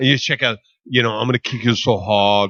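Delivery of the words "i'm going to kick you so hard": fake Austrian accent, lower pitch. Acting out a movie line while talking about action films: put-on Austrian accent. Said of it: "I'm doing an Austrian accent".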